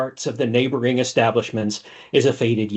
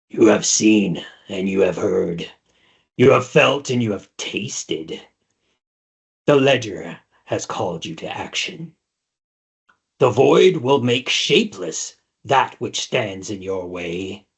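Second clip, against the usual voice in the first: deep, otherworldly, unearthly voice; 3 semitones lower than usual. Narrating a scene, a woman about to faint suddenly speaks: deep, unearthly voice. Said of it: "In a deep, unearthly voice".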